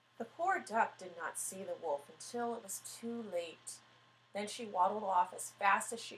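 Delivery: plain reading voice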